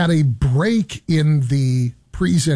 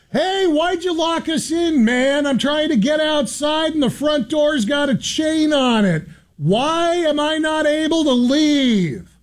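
very high, loud, clear voice; 12 semitones higher than usual. Retelling going back in to complain that the front door was chained, in a loud, clear voice. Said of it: "in a loud, clear voice so that everybody could hear".

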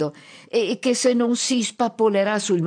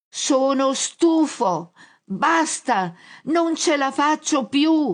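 drawn-out, slow, high-pitched shout; 7 semitones higher than usual. A hard-of-hearing man answers Pit-Pit's question about superpowers, shouted.

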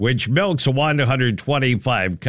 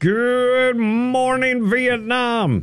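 very high, slow, put-on impression voice, shouting. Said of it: "Robin Williams".

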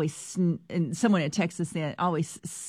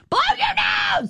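put-on angry shouting, much higher pitch; 6 dB louder than usual. Parent retelling throwing napkins at a sniffing kid in the car, mock-angry command. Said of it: "angrily saying".

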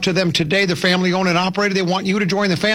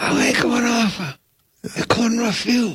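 higher put-on voice with napkin in mouth; 5 semitones higher than usual. Doing an impression for the co-host with a napkin in the mouth: Vito Corleone voice. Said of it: "you're doing it right now".

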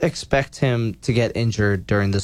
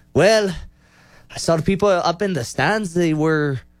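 attempted Irish accent, pitched up; 7 semitones higher than usual. Retelling a fighter's press conference answer: attempted Irish accent imitating Conor McGregor. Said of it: "we're gonna try to do an Irish accent".

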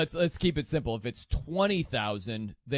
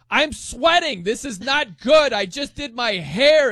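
shrill, high, very loud, full-volume yelling; 11 semitones higher, 11 dB louder than usual. Imagining someone at kickboxing, the speaker acts out yelling at the coach. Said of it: "you're yelling at your coach like".

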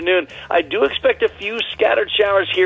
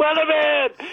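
high-pitched put-on yell. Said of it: "Joe Piscopo yelling".

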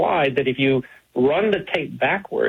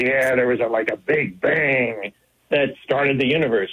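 put-on sarcastic tone, slower. Retelling a radio interview, the speaker quotes an astronomer: mock-sarcastic Fred Hoyle quote. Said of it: "He was saying it sarcastically".

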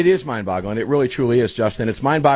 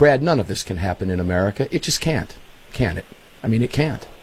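normal talking voice

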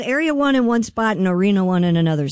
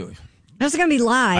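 ordinary delivery

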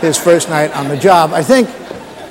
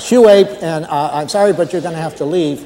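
ordinary talk, nothing marked

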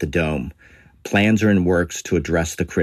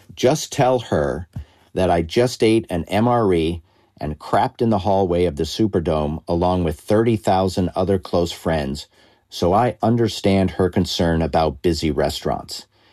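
normal talking voice

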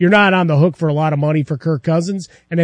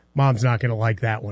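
dry, expressionless, low, quiet deadpan; 6 semitones lower, 6 dB quieter than usual. Retelling what the kid said after the player got flattened: retelling a deadpan remark. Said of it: "the kid deadpanned".

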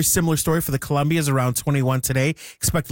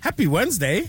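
genuinely surprised, pitched-up voice; 6 semitones higher than usual. Host greeting everybody at the start of the show, sounding surprised. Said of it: "You sound surprised".

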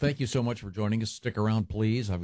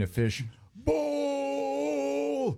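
high, slow, drawn-out mock soccer announcer goal yell. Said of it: "You know how the announcers yell".

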